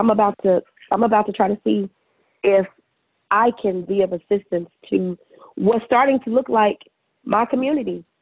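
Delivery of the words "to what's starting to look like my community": ordinary talk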